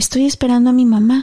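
put-on small child's voice. Speaker retells what Ricardo answered when asked what he was doing; Ricardo's small child voice. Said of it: "con esa vocecita de niño".

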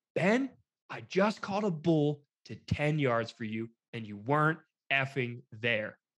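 angry, cutting, scolding whisper-yelling. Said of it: "That's called whisper yelling".

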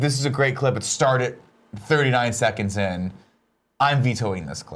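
normal talking voice

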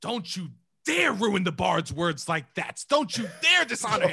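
loud, angry yell. Retelling what an actor yelled at a friend: Kevin Spacey yelling. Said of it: "Kevin gets up and yells".

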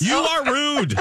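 put-on emotional outburst. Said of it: "I felt like Sally Field at the end of Steel Magnolias".

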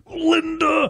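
slow, high drawled voice.

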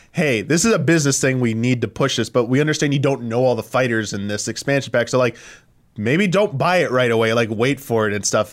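ordinary talk, nothing marked

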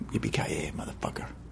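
barely audible, low-register, whispered hero voice. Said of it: "what I heard is woo, woo".

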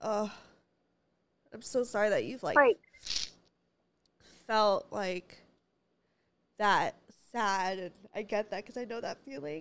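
speaking through tears, crying while talking. Telling someone you are sorry they felt so sad because you know the feeling, crying. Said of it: "why am I crying?".

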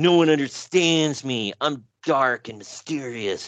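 put-on angsty teenager voice. Retelling what a wrestler said in an interview: mocking Raven as angsty teen. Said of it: "sounds like an angsty teen scribbled it".

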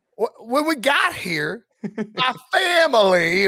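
high, slow, drawn-out fake Southern accent. Retelling a coach's introductory speech at a basketball game: imitating Brian Kelly's fake Southern accent. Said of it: "his family in that accent".

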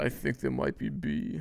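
put-on sultry whisper. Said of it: "Why'd you just whisper in my ear like that?".

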